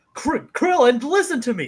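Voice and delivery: play-acted serious, drawn-out voice. Retelling how serious Goku gets in Super Saiyan form: imitating Goku raising his voice. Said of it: "raises his voice towards Krillin".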